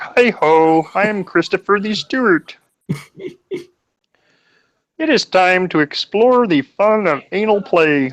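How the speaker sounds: put-on frog puppet voice. Voicing a character in a brothel scene: Kermit the Frog voice. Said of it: "combining Kermit the Frog with".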